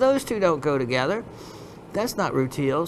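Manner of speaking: ordinary delivery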